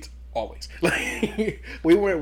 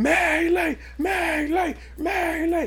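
mock shrill, drawn-out cheering at full volume; 13 semitones higher than usual. Speaker imagines a crowd at a ball cheering freely: imitating a crowd yelling. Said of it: "yelling at the top of their lungs".

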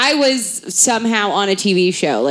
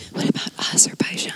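little voice in a fast whisper. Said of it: "and then a little voice goes".

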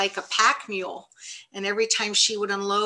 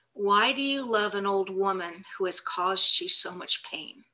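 ordinary talk

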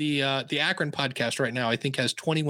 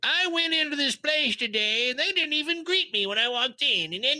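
put-on very high, grumbling, cranky old man voice; 12 semitones higher than usual. Recalling old customer service podcast episodes, imitating a grumpy old man. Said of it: "I just sounded like a grumpy old man".

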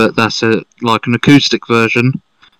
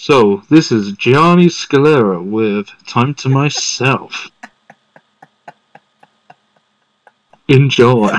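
radio announcer, dj-style on-air delivery. Asked by a co-host to do the show intro, radio announcer voice. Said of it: "Do you want to do the radio voice?".

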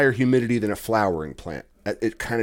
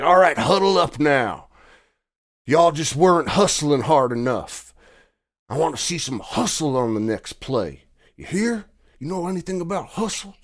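play-acted coach yell, raised and pitched up; 5 semitones higher, 3 dB louder than usual. Speaker compares someone to a high school football coach, imitating a yelling football coach. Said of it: "you're like a high school football coach, like yelling at the kids".

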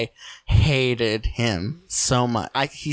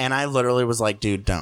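ordinary talk, nothing marked

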